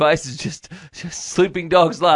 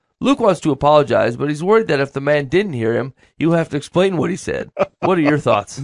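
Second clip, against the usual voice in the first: normal talking voice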